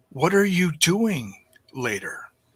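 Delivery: soft, close, intimate hushed stage whisper. Recounting his moment, quoting what a woman half-whispered in his ear, retelling a half-whisper. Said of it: "she whispers in my ear".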